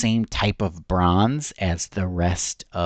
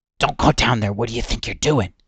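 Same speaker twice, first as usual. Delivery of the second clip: rough voice whispering; 3 semitones higher than usual. A rough voice echoes and whispers into Arif's ear: rough whispering voice. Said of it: "this sort of rough voice ... whisper into his ear".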